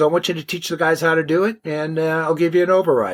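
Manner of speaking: usual speaking voice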